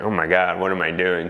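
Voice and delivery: ordinary talk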